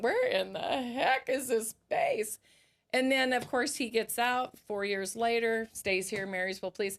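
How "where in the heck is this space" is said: high, swooping, drawn-out, crying, tearful voice. Retelling the mother's arrival on the family drive: imitating mom crying. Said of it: "she's crying 'cause she's like".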